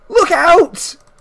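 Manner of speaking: very high-pitched, full-lungs scream. Voicing a boy on a runaway cart: screaming at the top of his lungs. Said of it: "screaming at the top of his lungs".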